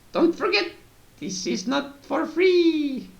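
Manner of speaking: very high put-on old lady voice, free stretched out. Telling a story, quoting what an old lady said while turning around, imitating the old lady. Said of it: "You sounded like my uh".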